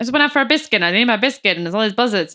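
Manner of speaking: put-on loud, broad Georgian accent, laid on thick. Retelling what a witness said: imitating Elbert Clark's thick Georgian accent.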